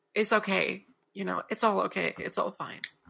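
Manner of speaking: imitated defeated-sounding voice. Acting out Norman's reply, saying he doesn't argue: imitating defeated Norman. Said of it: "completely defeated".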